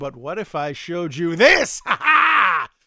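mock triumphant, gloating delivery.

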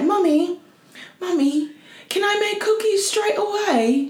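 put-on little girl's voice, English accent, high pitch. Imitating a three-year-old daughter: imitating a child's English accent. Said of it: "so they'll have English accents".

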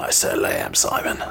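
quiet, low whispering.

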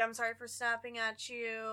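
plain

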